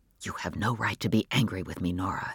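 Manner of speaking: very low, hushed half-whisper, no voice. In a story, a man half-whispers to nora. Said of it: "he whispered".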